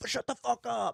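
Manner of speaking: mock frantic, freaked-out, panicked blurt, very high. Retelling a man running out of Walmart: imitating someone freaking out. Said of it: "freaking like".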